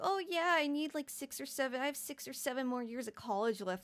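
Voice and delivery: put-on goofy, silly voice, mocking. Retelling how a girl mocked a player on stream: imitating a mocking silly voice. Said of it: "mocking him in, like, a silly voice".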